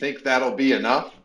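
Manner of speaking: put-on heavy, thick Brooklyn New York accent. Retelling a movie scene with a telegram agent: thick New York accent. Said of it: "in a thick New York accent says".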